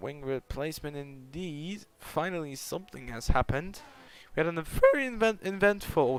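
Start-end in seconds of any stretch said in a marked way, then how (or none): 4.4-6.1 squeaky voice crack, higher. Commentating a race after a wing replacement: voice crack. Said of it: "that was a voice crack".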